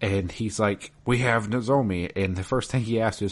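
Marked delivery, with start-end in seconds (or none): 1.0-2.1 odd, strange put-on creature voice. Retelling a phone call in a game, doing the caller: Gollum voice. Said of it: "and it's Gollum".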